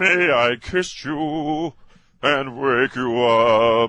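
stupid, high, loud, hammy voice, stretched "up". Joking about fairy tales, speaker voices Prince Charming in a stupid Prince Charming voice. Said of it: "Is he going to use that stupid voice?".

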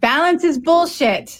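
put-on high, loud yelling in a Cuban accent. Crediting a friend and colleague by quoting her saying: Luli B's yelled Cuban accent. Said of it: "she yells in her Cuban accent".

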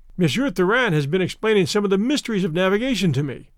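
ordinary delivery

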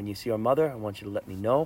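calm, dull, quick delivery. Quoting Michael's line to Fredo; calm, dull Michael voice. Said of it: "That's that calm, dull Michael voice".

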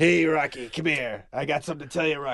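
low-pitched voice calling out. Doing a quick impression after the other speaker names Burgess Meredith: Burgess Meredith impression. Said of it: "is an imitation show".

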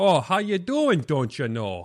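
Upper Peninsula Michigan accent. Talking about Wisconsin accents, showing how the Yooper accent sounds; Yooper accent. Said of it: "the Youper accent either".

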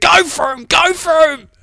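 shrill, very loud, high, long-stretched yell. Retelling how he yelled at the computer while watching cycling: imitating someone yelling. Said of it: "he's yelling at the computer".

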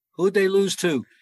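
mock, very high, loud yelled shout. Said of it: "Shula yells out".

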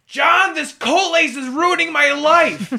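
very high, frantic, shrill screaming. Retelling what a man screamed at his nurse: imitating a man screaming. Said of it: "and he screams".

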